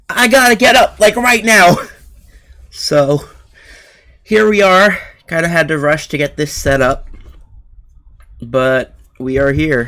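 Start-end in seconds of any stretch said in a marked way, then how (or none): 0.2-1.8 high, loud panicked outburst. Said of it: "I'm like".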